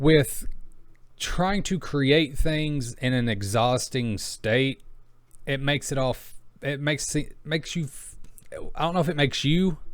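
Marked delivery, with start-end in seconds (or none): 5.5-9.8 halting stammer, tripping over words, restarting phrases. Speaking to viewers while exhausted, stuttering. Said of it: "sorry, I'm stuttering".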